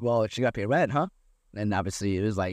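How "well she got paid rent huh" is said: put-on teasing, jokey tone. Retelling others' joking remark about a woman now living there: mock-joking tone. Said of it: "they're jokingly like".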